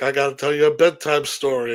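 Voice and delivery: ordinary talk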